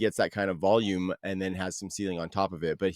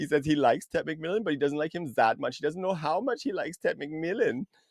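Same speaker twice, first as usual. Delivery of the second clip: put-on Swiss accent, pitched high; 7 semitones higher than usual. Redoing the joke after being asked again: put-on swiss accent. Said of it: "Do it again, [name]".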